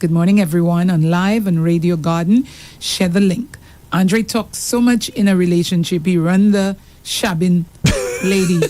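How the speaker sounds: usual speaking voice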